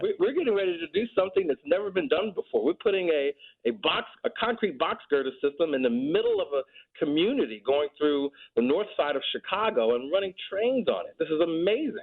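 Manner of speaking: high, laughing, excited enthusiasm.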